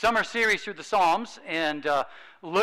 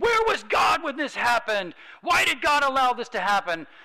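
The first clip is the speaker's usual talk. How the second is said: mock, high, furious, grieving yelling; 8 semitones higher, 3 dB louder than usual. Retelling an atheist's questions after his sister died: imitating someone yelling. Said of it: "he just started yelling at me, saying".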